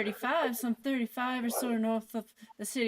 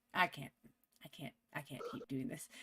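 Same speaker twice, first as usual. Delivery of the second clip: ordinary talk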